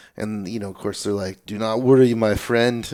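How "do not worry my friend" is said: put-on reassuring French-accented voice. Retelling what the organizers said about getting out: imitating a french accent. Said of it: "French accent".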